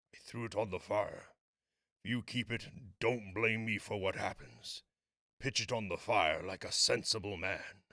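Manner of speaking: quiet, grave, solemn, serious tones. Narrating a story, the sergeant major warns his friend, grave, solemn warning. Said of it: "said the sergeant major, / he said quietly, / The soldier regarded him in that way middle aged is wont to regard presumptuous youth. / said the sergeant major, / His tones were so grave that a hush fe".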